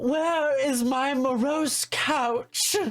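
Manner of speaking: theatrical voice. Narrating a voice heard from inside, in a dramatic voice. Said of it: "you can hear from inside a dramatic voice saying".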